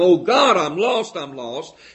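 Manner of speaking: loud, frantic, desperate all-out scream. Retelling a man running down the aisle toward the speaker, retelling a scream. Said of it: "screaming the whole time".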